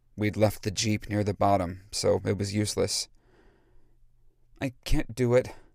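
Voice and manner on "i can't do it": a bit embarrassed and sheepish, higher pitch. Narrating someone who faces walking all the way back down the hill, a little embarrassed. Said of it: "a little embarrassed".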